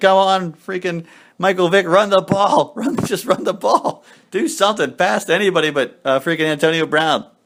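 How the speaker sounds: high, desperate, pleading begging out loud. Retelling own words during a slow first half: retelling own begging. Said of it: "I was begging".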